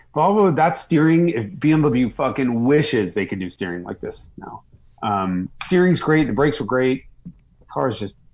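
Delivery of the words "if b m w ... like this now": ordinary talk, nothing marked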